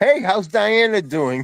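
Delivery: high, jeering taunt. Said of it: "catching a pass in front of the Patriots sideline and going".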